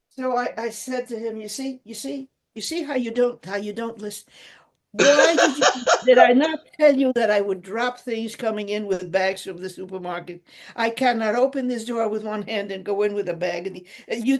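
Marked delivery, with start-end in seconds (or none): none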